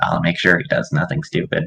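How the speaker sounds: hushed, whispered stage-whisper aside. Speaking in character, looking back to the party: whispering. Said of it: "kinda looks back to the party and kinda whispers".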